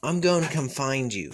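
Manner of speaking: ordinary delivery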